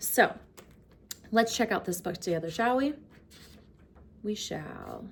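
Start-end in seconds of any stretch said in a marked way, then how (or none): 4.2-5.0 very hushed, calm, low, soft, nice voice. Answering their own question before reading a calm-corner book, nice calm voice. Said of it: "Nice, calm voice".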